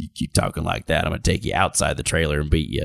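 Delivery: low, fast gravelly growl.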